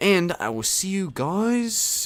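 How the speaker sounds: high Australian accent, guys drawn out. Signing off a video to viewers, slipping into an Australian accent. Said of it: "that was like an Australian accent".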